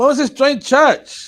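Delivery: high, loud, slow excited cheer.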